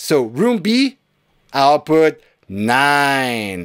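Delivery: called out in a put-on judge announcer voice. Reading out track outputs in a tutorial, talking like a samba school judge. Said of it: "I feel like I'm talking like a samba judge here".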